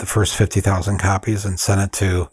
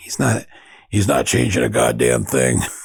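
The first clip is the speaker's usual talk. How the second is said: gruff, creaky, rough-edged grumble; 4 semitones higher than usual. Retelling how Mort cut in across the table: gruff voice imitating Mort. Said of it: "I'm using this gruff voice".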